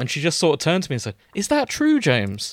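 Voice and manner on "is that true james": play-acted, really sincere, earnest, pitched-up voice. Retelling what she asked him after his joke, imitating a sincere voice. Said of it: "In like this really kind of sincere voice".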